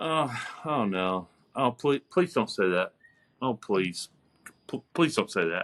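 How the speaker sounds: play-acted imploring, repeated pleading, stumbling over please. Retelling a scene where a character tries to be nice: imitating a character pleading. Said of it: "and he's just like".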